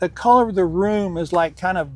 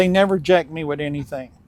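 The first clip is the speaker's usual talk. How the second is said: ordinary talk, nothing marked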